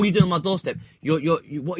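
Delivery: high, heated, angry, confrontational railing. Acting out a homeowner railing at a man on the doorstep: imitating someone railing angrily. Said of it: "start railing".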